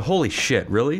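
ordinary delivery

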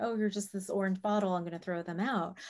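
plain

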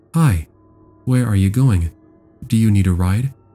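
mock, super sweet, sugary tone. Retelling how a stranger in a car spoke: imitating a super sweet voice. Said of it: "says in a super sweet voice".

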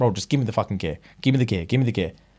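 hushed half-whisper under the breath. Retelling a secretly recorded street conversation: imitating a half-whisper. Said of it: "whispering to him".

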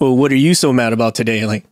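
put-on sarcastic, jabbing tone. Retelling what someone says when anger shows: imitating a sarcastic jab. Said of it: "that sarcastic poke".

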